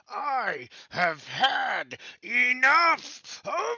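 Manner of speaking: screaming as loud as possible. Playing a character firing a scarab at an enemy: screaming as loud as possible. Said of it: "I'm going to scream as loud as I can".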